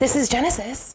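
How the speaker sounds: phone voice used for answering calls. Showing how the speaker answers a call: phone voice for answering calls. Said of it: "I love my phone voice".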